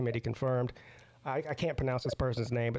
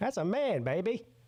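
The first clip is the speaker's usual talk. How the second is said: put-on swaggering British voice; 7 semitones higher than usual. Commenting on someone in a photo, in an Austin Powers voice. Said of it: "He sounds like Austin Powers".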